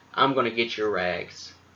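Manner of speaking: mock angry, scolding old lady voice. Retelling how Dorothy scolded people when mad: imitating Dorothy when mad. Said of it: "she'll put on a mean face and she'll say".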